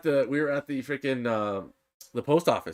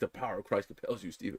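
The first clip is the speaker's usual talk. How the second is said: put-on mutter under breath, much quieter; 4 semitones lower, 10 dB quieter than usual. Retelling what a man said about Steven at the back, retelling a mutter under breath. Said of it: "under his breath being like".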